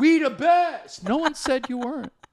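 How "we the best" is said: know-it-all bragging tone, pitched up higher. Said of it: "You're so [name] about being right".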